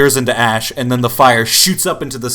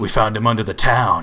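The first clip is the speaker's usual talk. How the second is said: very low halfling character voice, much quieter; 3 semitones lower, 4 dB quieter than usual. Voicing a halfling answering a player's question in a game, very low halfling voice. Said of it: "I've got a very low voice for a halfling".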